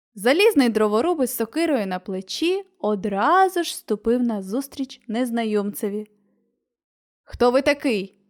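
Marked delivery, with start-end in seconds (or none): 7.3-8.1 stern, severe, strict delivery. Narrator reads the Tin Woodman confronting a stranger: stern question. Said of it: "суворо запитав він".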